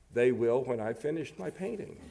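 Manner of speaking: ordinary delivery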